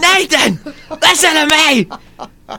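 very high, slow, drawn-out freaked-out screaming. Retelling shouting a stage line when the mic failed: imitating own screaming. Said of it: "so I just start screaming".

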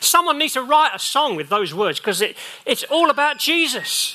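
high-pitched yelling out in full cry. Speaking to listeners with their Bibles open, shouting. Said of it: "Sorry, I'm shouting".

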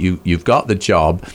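ordinary talk

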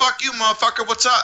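street-tough gangster swagger, real-talk attitude. Contrasting two film characters, imitating Killmonger: Killmonger talking gangster. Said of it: "He talked gangster".

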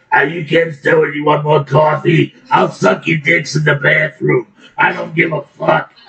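raspy waitress character voice. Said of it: "she sounds like a third-shift diner waitress".

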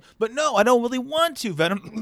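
very high, offhand, casual talking voice. Acting out an actor between voiceover lines: Tom Hardy normal voice. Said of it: "great Tom Hardy normal impression".

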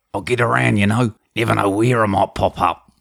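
put-on Australian outback killer voice. Announcing the show's movie-impression bit, then performing: Mick Taylor impression. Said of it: "this is where Mick Taylor met Bane".

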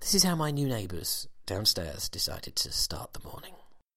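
quiet, hushed tone. Introducing a recording of the new neighbours downstairs: quiet voice so neighbours won't hear. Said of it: "notice how my voice has gone quiet".

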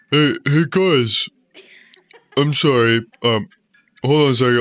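talking with mouth full. Speaker pausing the group to swallow food, talking with mouth full. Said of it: "I gotta swallow my food".

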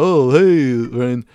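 loud dad-style voice with "hey" stretched long. Showing the impression of his dad: imitating his dad. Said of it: "this impression I do with my dad".

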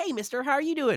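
put-on very high voice of a small child. Showing the kinds of voices they can do, in a little kid voice. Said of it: "little kids that just talk like this".

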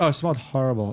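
acted flat delivery. Imitating how another speaker says things smell bad: imitating a monotone delivery.

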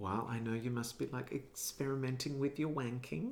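put-on goofy, soft, silly little-kid voice. Retelling her uncomfortable passing comment to him, in a silly childish voice. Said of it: "in a like a silly, childish voice of".

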